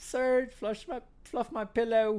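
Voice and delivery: put-on British woman's voice. Retelling a wrestler's line to the Surge, in a put-on British woman's voice. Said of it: "You gave her a British accent".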